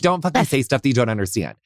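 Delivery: ordinary talk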